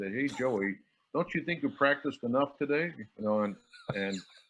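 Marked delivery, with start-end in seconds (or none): 0.1-2.9 put-on New York Brooklyn accent. Retelling what a man told him as a student, in a Brooklyn accent. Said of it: "he had the Brooklyn accent".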